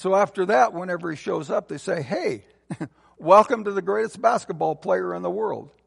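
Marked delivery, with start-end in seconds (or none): 2.0-5.6 laughing, mocking delivery. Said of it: "or are they trying to mock?".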